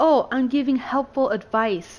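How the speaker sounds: slow, condescending, patronizing know-it-all drawl. Retelling someone's constant nitpicking: imitating a condescending tone. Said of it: "says it in such a condescending way".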